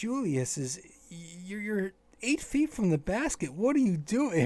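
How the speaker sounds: shocked, appalled, high-pitched disbelief. Retelling how Doris reacted to a bad player: imitating Doris, appalled and shocked. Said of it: "you could just hear it in the tone of her voice that she was just completely, uh, in shock".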